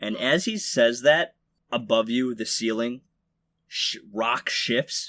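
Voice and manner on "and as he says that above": ordinary delivery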